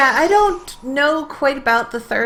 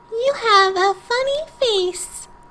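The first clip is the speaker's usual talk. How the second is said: put-on very high, sweet, cute little-girl voice; 11 semitones higher than usual. Voicing a game character who answers the player, in a cute young girl voice. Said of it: "about as cute and young voice as I can do with the girl voice".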